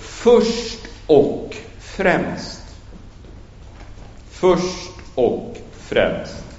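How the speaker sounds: slow, whispered, heavy stress on Swedish "först och främst".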